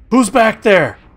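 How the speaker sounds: high, loud scream like an alarm. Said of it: "the volume that he screamed".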